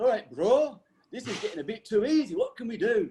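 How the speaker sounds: poor put-on Welsh accent. Quoting a swimming training partner's words: terrible fake Welsh accent. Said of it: "as he says in his Welsh accent ... That's a terrible Welsh accent, isn't it?".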